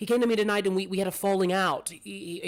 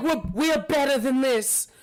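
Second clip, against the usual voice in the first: mock shrill, high shriek with a stammer; 8 semitones higher, 4 dB louder than usual. Voicing a character screaming at her dead aunt: screaming at a corpse. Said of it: "she's screaming at the corpse".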